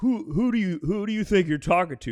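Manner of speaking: loud, high-pitched, confrontational, stumbling start. A comedian retells a man at his show confronting him: retelling a loud challenge. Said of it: "He kind of says it loud".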